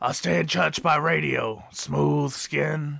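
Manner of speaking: slow, creaky, rough smoker's rasp. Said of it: "Why does he sound like he's been smoking now?".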